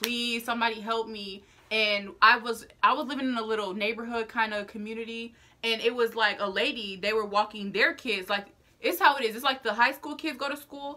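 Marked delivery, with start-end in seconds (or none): 0.0-1.4 mock-crying, put-on tearful voice. Speaker retells lying in a cold ditch, pleading for help: retelling a crying plea. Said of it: "I'm just sitting there crying like".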